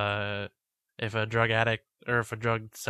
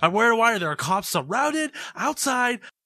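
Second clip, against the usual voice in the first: acted, mock scream, much higher-pitched; 12 semitones higher, 6 dB louder than usual. Suggesting what the other person should have done when threatened, acting out a scream. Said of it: "Started screaming".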